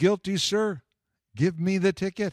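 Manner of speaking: called out with force. Retelling what he yelled to the officer after blowing a red light, retelling a yell. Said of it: "But I was yelling".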